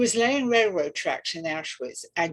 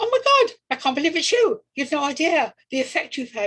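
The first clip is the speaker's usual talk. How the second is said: put-on excited, high, loud chipmunk chatter; 8 semitones higher, 5 dB louder than usual. Retelling the moment the man answered the phone, acting out excited chipmunk voice. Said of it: "when I'm excited, I sound like a chipmunk".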